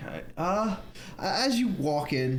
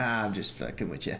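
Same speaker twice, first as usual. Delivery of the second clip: normal talking voice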